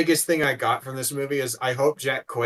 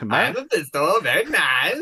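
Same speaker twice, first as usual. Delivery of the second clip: mock Eastern European accent, pitched much higher; 5 semitones higher, 3 dB louder than usual. Wishing the actor had played Mephisto as Borat, the speaker does a Borat voice. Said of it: "if he did his Borat voice".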